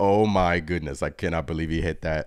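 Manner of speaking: usual speaking voice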